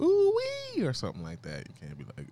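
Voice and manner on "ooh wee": very high, light-voiced whooping exclamation. Showing what to say with a light voice: light voice. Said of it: "when you got a light voice, you gotta be like".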